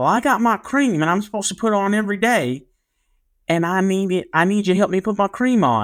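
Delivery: put-on heavy, broad small-town Arkansas accent, laid on thick. Retelling what a kid named Cody asked him: Cody's big accent. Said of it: "he had a really big accent".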